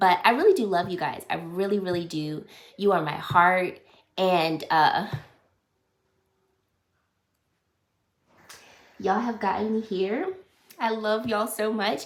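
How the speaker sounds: speaking through tears. Thanking viewers at the end of a video, crying. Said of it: "I apologize for crying".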